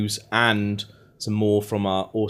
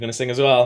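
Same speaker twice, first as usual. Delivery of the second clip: ordinary talk, nothing marked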